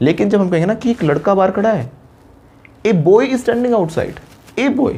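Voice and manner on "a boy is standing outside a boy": put-on A in a boy drawn out, slow and high. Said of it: "उस चीज़ पे focus ज़्यादा डाला है".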